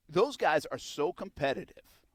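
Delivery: plain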